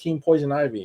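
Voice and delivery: ordinary talk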